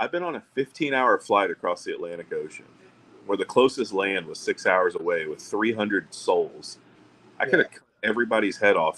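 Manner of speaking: normal talking voice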